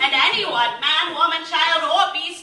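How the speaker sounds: put-on royal proclaiming tone.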